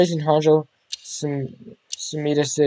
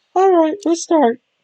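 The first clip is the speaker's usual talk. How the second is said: put-on kid voice, much higher, louder; 5 dB louder than usual. Voicing a kid character, the speaker tries a first take: attempted kid voice. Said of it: "the voice I'm trying to give this kid".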